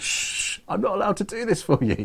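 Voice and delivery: very high, put-on Scottish accent. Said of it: "she didn't understand the accent".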